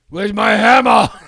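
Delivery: very loud, booming bellow at full blast. Asked for an impression, answering with a Thor voice. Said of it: "Give me your best Thor, uh, impression".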